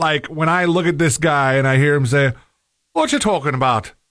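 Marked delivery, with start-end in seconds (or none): 2.9-3.9 mock Irish-sounding accent. Watching a video, speaker imitates how a man's line sounds: Irish-sounding accent. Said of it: "I'm doing Irish".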